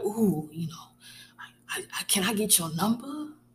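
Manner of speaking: clumsy, stammering, gushing put-on lovestruck voice. Acting out people smitten by her asking for her number: terrible impersonation of a smitten admirer. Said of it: "that was a terrible impersonation of whoever".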